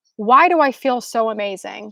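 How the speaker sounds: ordinary delivery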